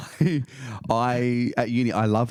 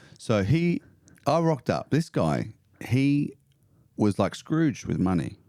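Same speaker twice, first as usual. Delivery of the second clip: ordinary delivery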